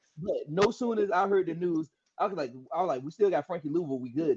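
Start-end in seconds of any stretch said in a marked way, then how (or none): none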